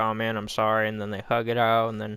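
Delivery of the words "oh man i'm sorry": ordinary delivery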